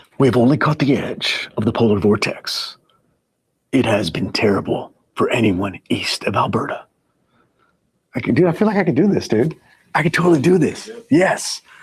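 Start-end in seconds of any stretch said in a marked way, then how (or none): 0.2-6.9 dramatic, mysterious movie-trailer narrator voice. Host reading a message aloud to viewers, in a mysterious cinematic voice. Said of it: "now I got to use my like mysterious cinematic voice".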